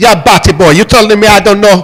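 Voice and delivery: loud put-on Jamaican accent. Describing a woman in an online video, imitating a Jamaican accent. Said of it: "that's fake accent".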